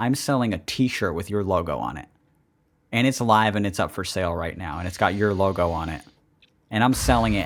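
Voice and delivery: plain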